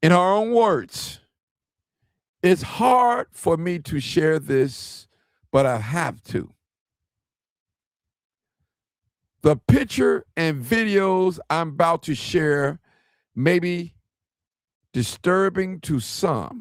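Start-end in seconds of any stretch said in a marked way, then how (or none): 2.4-16.6 read very slowly and deliberately, word by word. Reading a mother's own words aloud to listeners, reading slowly. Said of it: "I'm gonna try to read it slow".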